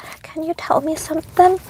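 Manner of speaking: the smallest, faintest, hushed little voice. Speaker retelling a pale, traumatized Nixon after a blood draw, imitating Nixon's tiny quiet voice. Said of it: "quietly in like the smallest voice".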